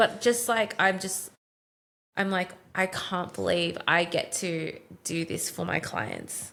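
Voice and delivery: heartfelt, moved voice, getting emotional. Talking with the other speaker about your work, getting emotional. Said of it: "I'm getting emotional thinking about it".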